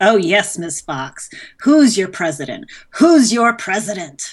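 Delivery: loud, fully shouted, yelled-out delivery. Reading aloud the President character's shouted line from a story, shouting. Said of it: "gyrates back and forth and shouts".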